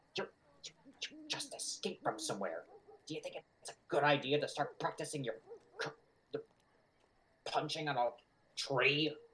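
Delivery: hushed whisper. Retelling what they whispered to a man punching a tree: whispering. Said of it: "I'm like whispering".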